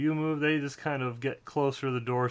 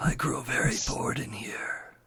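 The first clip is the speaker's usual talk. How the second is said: voice of a masked skeletal figure. Voicing a masked skeletal figure offering a riddle to a player: voice of a masked skeletal figure. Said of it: "and he says".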